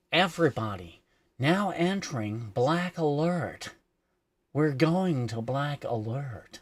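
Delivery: slow announcing voice like a ship's computer. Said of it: "the one on Discovery is just like".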